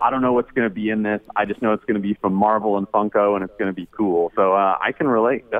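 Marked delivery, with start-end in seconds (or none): none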